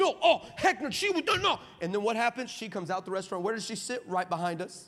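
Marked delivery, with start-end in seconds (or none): 0.0-1.6 mock impassioned, excited outburst, pitched up, drawn out. Telling a story, imitating a man getting all impassioned. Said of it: "He gets all excited".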